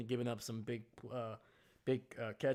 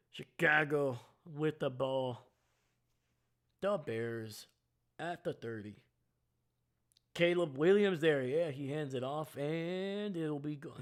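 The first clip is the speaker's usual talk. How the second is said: slow sportscaster play-by-play announcer voice; 2 semitones higher than usual. Narrating a chicago bears play as it happens, play-by-play announcer voice. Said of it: "I'm not going to do the voice the whole time".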